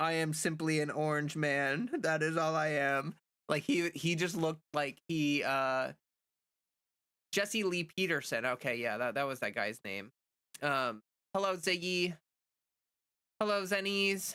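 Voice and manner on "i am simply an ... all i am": dejected, defeated drone, completely crushed and resigned. Imitating Trump sitting in the Oval Office: imitating a dejected Trump. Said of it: "the most dejected man alive".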